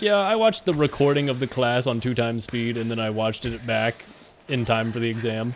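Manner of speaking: ordinary talk, nothing marked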